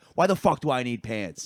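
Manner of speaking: angry, fed-up, furious outburst. Retelling how a man answered being asked about his pants: imitating a furious man. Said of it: "he just goes off".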